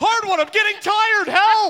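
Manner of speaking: very high, strained, tired cry. Voicing Rust falling behind in the water: tired swimmer calling for help. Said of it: "immediately starts falling behind".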